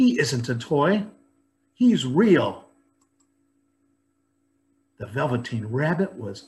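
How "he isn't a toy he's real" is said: emphatic, drawn-out exclaiming outcry. A boy answers Nana's grumbling about his rabbit, exclaiming. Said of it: "exclaimed the boy".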